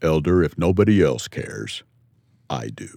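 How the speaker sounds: deep, low, slow and deliberate delivery. Retelling a call to church headquarters: imitating L. Tom Perry's deep voice. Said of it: "this deep voice comes on and says".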